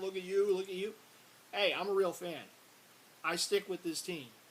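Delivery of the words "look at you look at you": ordinary talk, nothing marked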